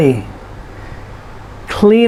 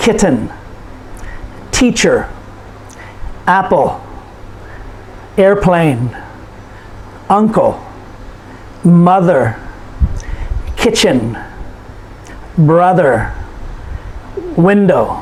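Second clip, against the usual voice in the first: each noun's first syllable stressed clearly, slow, spaced. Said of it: "we put the stress on the first syllable".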